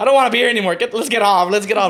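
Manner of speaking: put-on high, loud, frightened little girl voice.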